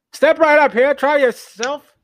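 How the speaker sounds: loud carnival-barker voice, pitched way up. Playing the seaside boardwalk balloon-popping game guy, in a carnival barker voice. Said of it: "like a carnival barker".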